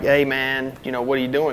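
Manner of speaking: ordinary talk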